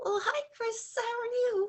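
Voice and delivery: put-on squeaky, very high, nervous little-girl voice. Speaker recalls a younger, nervous self greeting someone: mock-nervous squeaky little-girl voice. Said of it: "that little girl voice".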